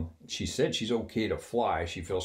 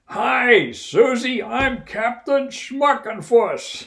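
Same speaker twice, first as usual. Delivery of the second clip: very loud, very slow, very high booming shout; 12 dB louder than usual. Retelling a captain introducing himself in the galley: retelling a shout. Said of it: "They're standing there shouting at each other".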